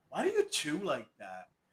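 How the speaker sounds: soft, nitpicking, fault-finding tone.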